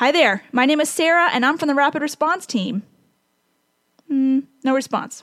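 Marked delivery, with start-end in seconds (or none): 0.0-2.8 mock projected, loud, carrying voice. Retelling introducing herself to a dozing patient at his bedside, in a loud voice. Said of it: "with my loud Sarah voice".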